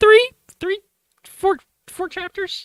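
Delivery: put-on drawn-out squeak.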